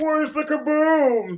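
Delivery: put-on high cartoon character voice. Doing a cartoon voice for the others: cartoon voice. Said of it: "he actually did that one pretty well".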